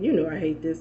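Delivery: ordinary talk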